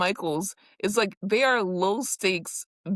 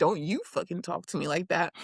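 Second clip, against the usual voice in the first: plain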